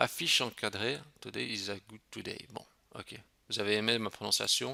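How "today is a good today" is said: quiet, lowered voice, hard to catch. Reading an English phrase so listeners won't hear: said quietly. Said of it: "j'ai dit moins fort pour que vous n'entendiez pas".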